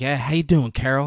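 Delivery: put-on angry man's voice. Retelling a film scene, his reply out in the cold woods: imitating an angry man. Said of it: "He's angry".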